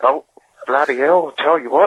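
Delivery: rough attempted Australian accent drifting toward Southern American. Trying out another accent: attempted australian accent. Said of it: "I'm trying to do Australian".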